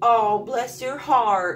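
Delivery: put-on Southern woman voice. Explaining a saying, the speaker quotes a Southern woman: Southern woman impression. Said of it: "Southern woman tells you".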